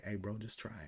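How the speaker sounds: hushed, tempting, egging-on half-whisper. Acting out the reckless inner voice while trading: reckless inner half-whisper. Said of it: "that reckless whisper that's like".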